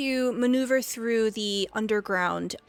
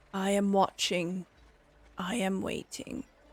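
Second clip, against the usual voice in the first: frog voice, much quieter; 2 semitones lower, 5 dB quieter than usual. A narrator voices a frog in a fountain speaking telepathically; telepathic frog voice. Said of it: "you hear his telepathic voice".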